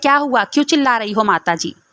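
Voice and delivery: ordinary delivery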